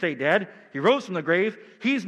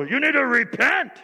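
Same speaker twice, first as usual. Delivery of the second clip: fiery, fired-up preacher shout, pitched up; 5 semitones higher, 3 dB louder than usual. Mimicking how pastors get all fired up: mock fired-up pastor shout. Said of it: "Get all fired up and go".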